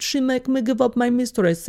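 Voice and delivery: attempted Swedish accent. Act out what a resentful man would say about giving up his mistress, in an attempted Swedish accent. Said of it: "And what's a Swedish accent?".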